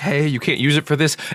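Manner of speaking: mock, put-on calm tone. Retelling a dispute over a phone number, imitating Dave's calm tone. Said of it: "despite Dave's really calm".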